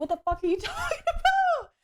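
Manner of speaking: high, laughing, outraged yell full of disbelief.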